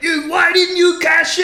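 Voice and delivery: put-on terrible, very high-pitched Scottish accent. Retelling what Drew said the week after the failed cash-in, in a terrible Scottish accent as Drew. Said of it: "This is a terrible Scottish accent".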